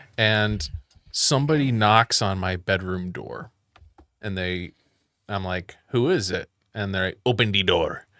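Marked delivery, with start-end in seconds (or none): 7.3-7.9 put-on Mexican accent. Retelling someone knocking on his bedroom door and answering him: Mexican accent. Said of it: "somebody with a Mexican accent".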